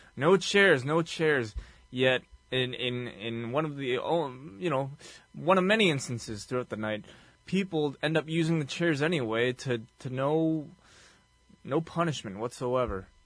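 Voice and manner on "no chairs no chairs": high, loud screaming over and over. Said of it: "keeps screaming".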